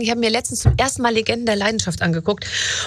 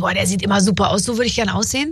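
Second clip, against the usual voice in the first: normal talking voice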